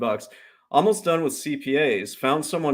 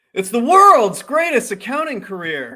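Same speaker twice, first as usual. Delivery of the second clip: very high, full-lunged, booming excited voice; 9 semitones higher, 7 dB louder than usual. Showing his partner how to pitch the accounting course, excited, lungs into it. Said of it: "you gotta get your lungs into it".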